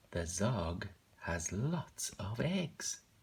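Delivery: astonished, surprised voice with rising pitch. Reading a book aloud, the speaker reads a line with an exclamation mark: surprised voice. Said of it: "I had to put on that voice because of the exclamation mark".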